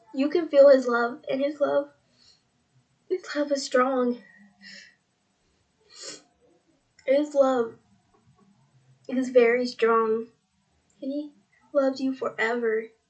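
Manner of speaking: tearing up, on the verge of tears. Telling the listener how much God loves them, tearing up. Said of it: "Sorry, I'm starting to tear up".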